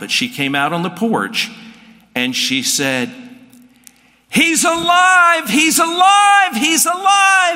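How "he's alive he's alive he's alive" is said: put-on very high, very slow, drawn-out joyful yell. Retelling how a sister ran onto the porch: imitating a woman yelling. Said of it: "I'm gonna yell".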